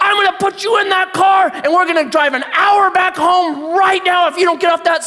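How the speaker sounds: play-acted, unhinged, unglued screaming, very high pitch. Telling a park story, the speaker acts out a woman screaming at a child: imitating someone screaming. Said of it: "she's just screaming at this child".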